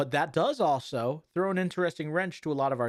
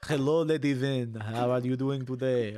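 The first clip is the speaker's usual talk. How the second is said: put-on, very strong French accent. Imitating a show character who has a very French accent. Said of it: "a very French accent".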